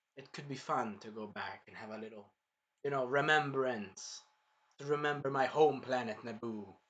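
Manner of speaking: dark, ominous, foreboding tone, acted out. Speaker recounts a line from the movie, in a mock-ominous retelling. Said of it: "he also says ominously".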